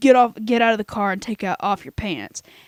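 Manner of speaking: gruff, rough male voice. Telling a story of people in a car hearing a stranger's order; gruff male voice. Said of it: "this really gruff male voice say".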